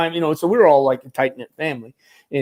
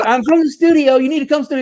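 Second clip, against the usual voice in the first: attempted put-on Australian accent, pitched up; 11 semitones higher, 4 dB louder than usual. Retelling knocking on a friend's door: imitating own fake Australian accent. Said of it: "trying to do an Australian accent".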